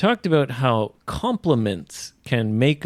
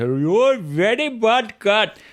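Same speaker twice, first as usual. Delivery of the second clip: high-pitched Indian accent, scolding tone; 10 semitones higher than usual. Talking about cats, done in an Indian voice: Indian accent. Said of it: "in an Indian voice".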